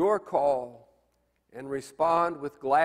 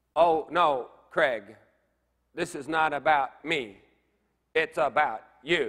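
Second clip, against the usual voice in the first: tiny, synthetic, mechanical little robot voice. The speaker imitates his helper dodging a personal question: mechanical little voice. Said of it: "in her mechanical little voice".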